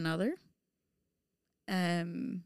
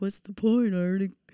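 put-on louder tipsy voice. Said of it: "the voice that I make when I'm speaking of past me".

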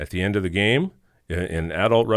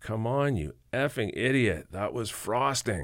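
mild, drawn-out put-on jeering; 3 semitones higher, 5 dB quieter than usual. Retelling how a fan at a hockey game screamed at the ref: imitating a guy screaming. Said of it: "there was a guy screaming at the ref".

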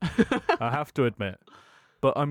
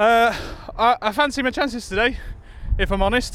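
winded, breathless voice, much higher and louder; 8 semitones higher, 5 dB louder than usual. A player answers an interviewer about his chances for today, out of breath. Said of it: "very out of breath".

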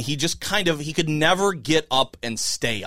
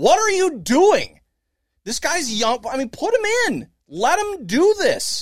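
play-acted, shrill, very high-pitched screamed outburst; 11 semitones higher, 3 dB louder than usual. Retelling screaming at the TV about a catcher choice: retelling a scream at the TV. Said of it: "I just screamed at the T V".

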